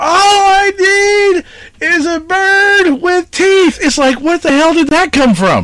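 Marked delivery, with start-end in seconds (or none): 0.0-3.8 play-acted, very slow, high, drawn-out hollered scream. Retelling a camp story where a buddy screams before dawn: imitating Tom screaming. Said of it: "you hear him scream".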